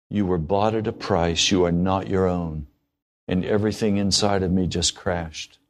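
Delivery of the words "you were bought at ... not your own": gentle, low-key, simple delivery. Quoting God's answer after an angry outburst: quoting a very quiet voice. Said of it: "he very quietly said back audibly".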